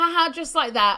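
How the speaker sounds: ordinary delivery, nothing marked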